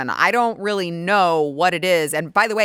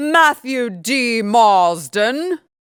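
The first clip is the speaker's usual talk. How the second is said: put-on British accent, pitched higher; 5 semitones higher, 3 dB louder than usual. The guest says his own name as asked, in a british accent. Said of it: "you do now have to say my name in the British accent".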